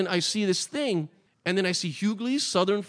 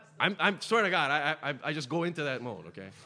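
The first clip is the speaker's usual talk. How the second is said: usual speaking voice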